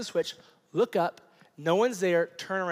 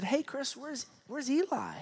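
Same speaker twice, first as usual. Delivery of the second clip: mock-sweet voice, much higher and quieter; 8 semitones higher, 6 dB quieter than usual. Retelling his wife asking him where their kid went, imitating her sweet voice. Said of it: "in this most like just sweet voice said".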